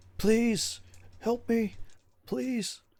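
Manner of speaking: very high, hoarse crying out. Describing a distant man's voice heard; imitating a hoarse man crying out. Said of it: "very hoarse and crying out".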